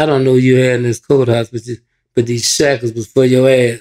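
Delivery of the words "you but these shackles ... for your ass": ordinary talk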